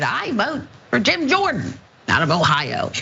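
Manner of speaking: squeaky voice. Relaying a vote during the House speakership ballot, squeaky Boebert voice. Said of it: "in her squeaky voice".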